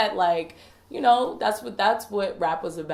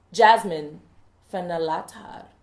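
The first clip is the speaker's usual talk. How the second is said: put-on Jamaican accent, louder; 4 dB louder than usual. Announcing a name on the show, trying a Jamaican accent. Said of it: "give it like a Jamaican accent".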